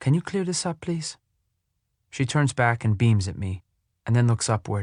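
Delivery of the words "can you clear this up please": quiet, firm, pitched-up voice. A mother asks her son to clear up, in a firm, quiet voice. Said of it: "she says in a firm, quiet voice".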